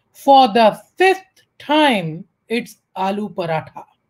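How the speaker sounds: utterly fed-up, very exasperated tone. Telling a joke, voicing the wife's reply: imitating an exasperated tone. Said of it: "with a very exasperated tone".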